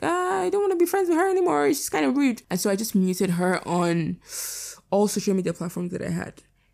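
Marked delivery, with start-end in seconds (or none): 0.0-2.4 very high, fast, squeaky mock voice. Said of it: "I was like".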